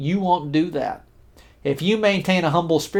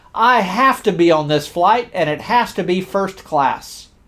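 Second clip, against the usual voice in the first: mock, firm, insistent and demanding tone. Retelling an angry passenger pushing to the front: imitating a loud demand. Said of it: "in a loud tone said".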